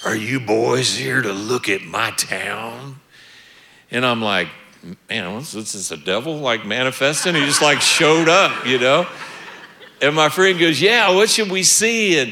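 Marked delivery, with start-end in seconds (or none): 0.1-3.0 rough, low gruff put-on voice, "town" drawn out. Retelling a man in a pickup truck pulling up to them, in a gruff voice. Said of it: "in a gruff voice".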